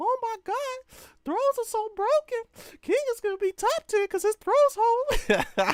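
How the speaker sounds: very high, squeaky cartoon voice. Mimicking people who complain about a game, the speaker does a Mickey Mouse voice. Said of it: "hit them with the Mickey Mouse voice".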